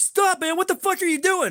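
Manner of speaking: put-on shrill, very high-pitched yell. Retelling heading toward the back rooms of a place, imitating Corey yelling. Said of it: "Corey starts yelling at me".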